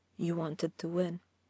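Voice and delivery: quietly. After shoving an angel onto his back, he finally speaks: quietly. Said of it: "he said finally, quietly".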